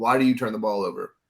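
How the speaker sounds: dead flat monotone with no inflection. Imitating a basketball player asking about turnovers: imitating Kawhi's monotone. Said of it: "in that same monotone I just had".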